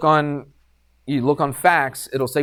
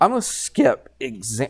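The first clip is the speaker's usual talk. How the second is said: voice breaking. Going over a geometry problem with listeners, speaking with voice cracking. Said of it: "my voice just cracked".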